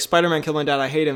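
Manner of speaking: ordinary talk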